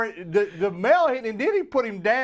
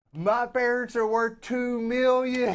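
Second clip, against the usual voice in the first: slow, belligerent, intoxicated, boastful rant; 3 semitones higher than usual. Retelling what a passenger on a video yelled: imitating someone yelling. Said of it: "he's yelling at him going".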